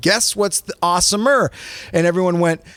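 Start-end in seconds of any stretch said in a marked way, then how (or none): none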